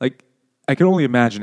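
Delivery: ordinary talk, nothing marked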